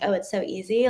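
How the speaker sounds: plain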